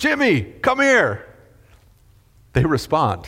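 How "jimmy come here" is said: loud, high-pitched shout. Speaker addressing parents acts out calling a child, shouting a child's name. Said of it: "When you shout".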